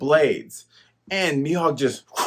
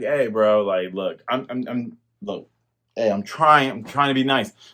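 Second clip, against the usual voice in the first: stumbling, apologetic, trying-to-sound-nice tone; 4 semitones lower than usual. Retelling a scene, voicing Mihawk: mock apologetic Mihawk. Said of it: "Mihawk is just apologizing, like".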